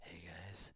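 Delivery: put-on seductive, sexy, flirty voice. Retelling a flirting scene from a film, imitating a sexy flirty voice. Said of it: "her sexy voice sounds exactly like Nebula".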